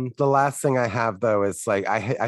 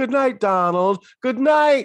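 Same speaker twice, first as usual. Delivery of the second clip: very high pitch, left hanging, open-ended, unresolved; 13 semitones higher, 4 dB louder than usual. Imitating Tony Randall's last-scene good night, with no finality. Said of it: "the way he says "good night" doesn't sound like it's a finality".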